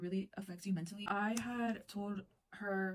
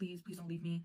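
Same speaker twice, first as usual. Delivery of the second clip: tearful, crying voice; 2 semitones lower than usual. Retelling begging a boyfriend not to leave: imitating tearful begging. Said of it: "begging him".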